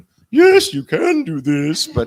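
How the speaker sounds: very high-pitched, loud, extreme female voice. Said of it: "those are extreme choices and for an extreme character".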